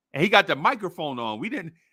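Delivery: ordinary talk, nothing marked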